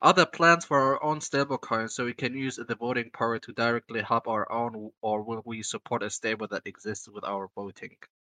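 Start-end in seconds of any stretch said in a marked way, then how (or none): none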